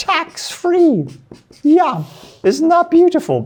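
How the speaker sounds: very high, swooping, excited voice, pitch shooting up. Explaining tax-free withdrawals from a Roth IRA: voice rising with excitement. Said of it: "my voice went up".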